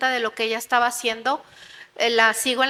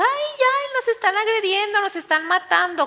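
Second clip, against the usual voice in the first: high, crowd-style screaming cries; 9 semitones higher than usual. Describing a kind of people who start screaming, imitating people screaming. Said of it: "empieza a gritar así".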